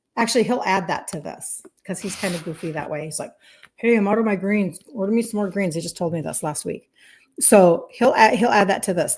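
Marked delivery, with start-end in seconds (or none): none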